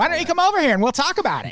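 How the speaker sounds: very high, cartoonish, swooping sing-song voice. Showing how unexpected his voice is while retelling a scuffle, cartoonishly high Tony Stewart voice. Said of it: "he just sounds like this".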